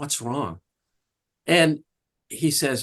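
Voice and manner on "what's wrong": soft, hushed half-whisper. Retelling a trial, asking a client a question: retelling own half-whisper. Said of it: "I whisper to him and I go".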